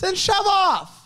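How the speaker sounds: very high, shrill, shouted yell. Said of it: "Why are you yelling?".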